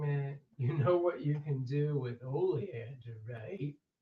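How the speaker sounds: slow, sinister, creepy-sounding tone. Repeating own reaction to a flower name: put-on creepy tone. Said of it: "Sounds creepy the way the way you read it".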